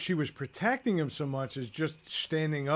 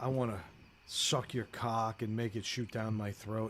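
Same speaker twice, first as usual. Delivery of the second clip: weird, pervy, fully sleazy creep voice; 6 semitones lower, 7 dB quieter than usual. Retelling a comedian's bit: Patton Oswalt weird pervy voice. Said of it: "he says it in that weird pervy voice".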